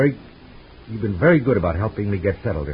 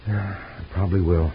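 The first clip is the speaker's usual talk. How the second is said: unhappy, downcast tone. A man answers someone who hopes he stays forever, sounding unhappy. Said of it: "You don't sound very happy about it".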